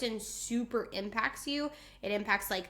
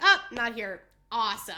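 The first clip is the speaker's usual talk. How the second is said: loud, sing-song sarcastic delivery; 5 dB louder than usual. Retelling reading an absent kid's name in class: retelling a sarcastic awesome. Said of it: "and I was like".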